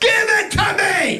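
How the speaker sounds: put-on, very high, shrill, top-of-the-lungs scream. Retelling a woman next door screaming at 3 a.m.: retelling a woman screaming. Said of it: "She's screaming at the top of her lungs".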